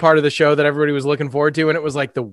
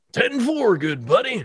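trucker-style voice, pitched higher; 8 semitones higher than usual. Recalling what a talking autonomous truck used to say, talking like a trucker. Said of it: "He just talked like a trucker".

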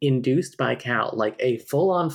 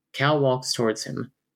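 usual speaking voice

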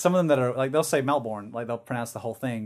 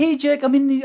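thick put-on New Zealand accent, pitched very high; 13 semitones higher, 7 dB louder than usual. Retelling a friend's phone call from New Zealand: imitating a strong Kiwi accent. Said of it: "it was so strong".

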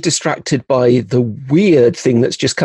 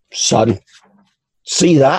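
put-on London Cockney wide boy voice. Storyteller voicing a character in a Ravenloft scene, in a Cockney wide boy accent. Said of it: "he's getting more of a Cockney wide boy".

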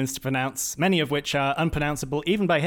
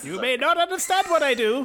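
put-on crazy old man voice; 11 semitones higher than usual. A character insists he serves an important purpose: crazy old man voice. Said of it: "Character voice".

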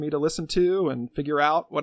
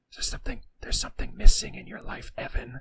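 secretive, barely voiced, soft hushed whisper; 3 semitones lower than usual. Retelling a strange video ad whose voice whispers: imitating a whispering voice. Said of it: "this voice whispers".

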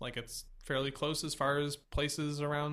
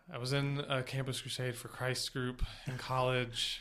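sorrowful, sad, reluctant, unwilling tone; 3 semitones lower than usual. Talking about a group they were in during college, sad. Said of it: "You sound so sad".

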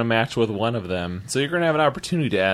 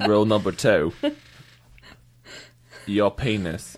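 bad fake British accent, much slower. Acting a scene, listing rules to the other character, bad British accent. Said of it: "I'm British".

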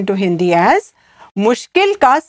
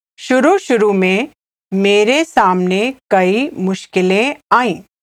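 slow, deliberate, careful word-by-word pace. A Hindi teacher repeats a phrase for learners, said again slowly. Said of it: "I'll say it again slowly".

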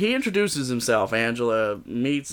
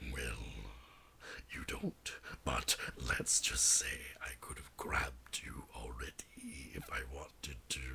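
creepy, breathy, hushed whisper; 13 semitones lower, 17 dB quieter than usual. Voicing a man from a story who approaches a young woman: creepy voice. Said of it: "what was the creepy voice you were doing earlier?".

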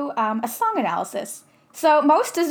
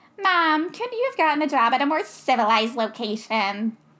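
dumb, ridiculous, stupid put-on little kid voice; 3 semitones higher than usual. Quoting the little sister's first line from a movie, in her stupid-ass voice. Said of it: "it comes out of her stupid-ass voice".

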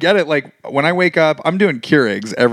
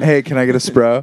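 normal talking voice

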